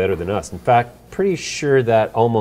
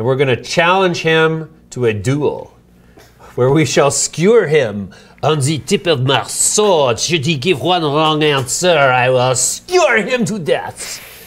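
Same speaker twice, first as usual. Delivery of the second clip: high, theatrical put-on French accent; 5 semitones higher, 4 dB louder than usual. Announcing tomorrow's guest and threatening a duel: put-on french accent. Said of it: "French accent".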